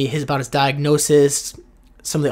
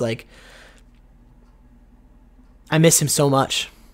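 tearful voice, fighting back tears. Recording an episode about someone they miss, fighting tears. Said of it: "I'm fighting tears".

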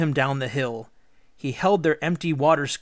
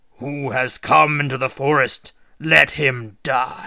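loud bellowing giant voice; 5 dB louder than usual. He sticks his head out his door and calls into the forest, bellowing. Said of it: "and bellowed".

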